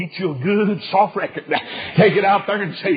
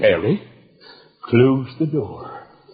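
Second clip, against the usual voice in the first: big, deep, slow, deliberate voice; 8 semitones lower than usual. Retelling what a preacher said to his little boy in a cafeteria, big deep voice. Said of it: "he talked a big, deep, big voice".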